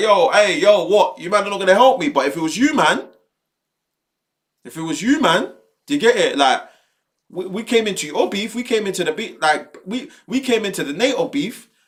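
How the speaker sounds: manipulative, guilt-tripping, laying it on thick. Retelling Trump warning NATO: imitating Trump guilt-tripping. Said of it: "He's trying the manipulation thing".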